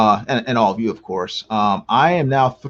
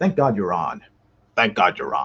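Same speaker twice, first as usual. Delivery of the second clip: put-on deep, dark, creepy low voice; 4 semitones lower, 3 dB quieter than usual. Reading out what John Diller says, trying to do his voice. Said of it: "I'm trying to do John Diller's voice".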